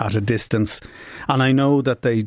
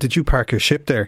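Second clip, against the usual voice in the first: put-on teasing voice; 2 semitones higher than usual. Retelling teasing an old classmate, a naval officer, retelling a tease. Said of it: "And I was teasing him".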